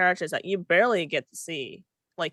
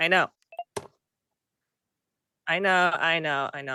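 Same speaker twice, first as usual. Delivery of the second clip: cheeky, sassy string of repeated words. Brushing off a warning about running out of time: sassy. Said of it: "I'm just being sassy today".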